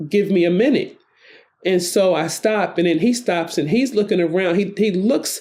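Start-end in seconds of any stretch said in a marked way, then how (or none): 0.1-1.0 firm, plain, steady delivery. Retelling a dream, quoting own reply to a man: firm reply. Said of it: "when I say to him firmly".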